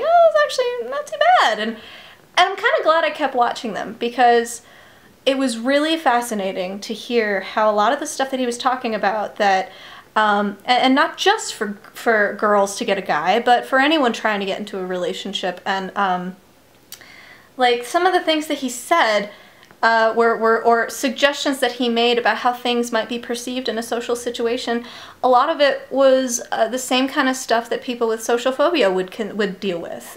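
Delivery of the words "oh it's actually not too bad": very high mock falsetto voice. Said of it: "I'm like".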